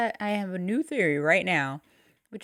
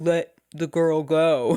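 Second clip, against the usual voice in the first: put-on deeper dad voice; 3 semitones lower, 5 dB louder than usual. Retelling a movie scene, the speaker quotes her line in a deeper dad voice. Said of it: "doing like a kind of a deeper voice".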